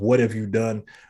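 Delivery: ordinary talk, nothing marked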